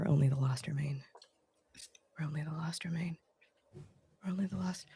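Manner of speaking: fast, very quiet mumble under the breath. Voicing a character watching a back and forth: mumbling under her breath. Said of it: "just mumbling under her breath".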